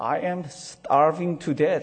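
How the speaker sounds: very slow, drawn-out whine.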